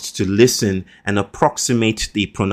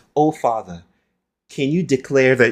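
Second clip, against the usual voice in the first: theatrical, teasing, mocking old-style stage declaiming; 4 semitones higher than usual. Retelling how a daughter mocks the speaker: imitating a daughter's mocking shakespearean voice. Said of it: "she does this Shakespearean thing, mimicking me and mocking me".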